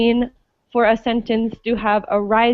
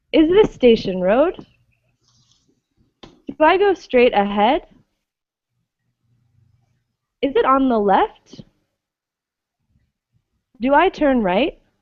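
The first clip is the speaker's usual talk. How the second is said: rising question endings on road, ahead, left, right; 3 semitones higher than usual. Showing language learners how English speakers ask questions: rising question intonation. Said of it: "do this rising intonation".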